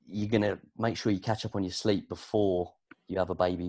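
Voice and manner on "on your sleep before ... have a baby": ordinary talk, nothing marked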